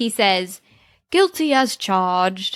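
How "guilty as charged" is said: put-on, affected British accent. Retelling someone pretending to be a barrister, in an imitated British accent. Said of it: "in a British accent".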